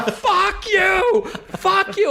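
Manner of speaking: put-on very high, very slow, hopping-mad child cry. Retelling the kid jumping up and down: imitating a hopping mad kid. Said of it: "hopping mad".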